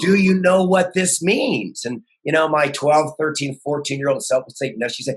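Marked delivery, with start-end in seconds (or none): 0.0-1.8 put-on scream, higher and louder. Retelling a mother opening a hidden report card: imitating mom screaming. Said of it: "she'd start screaming at me".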